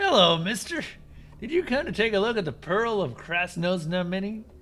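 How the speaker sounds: high, loud fake enthusiasm.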